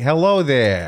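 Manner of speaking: put-on New York gangster accent. Speaker showing the others how they should talk, in a mock new york accent. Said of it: "That's like New York".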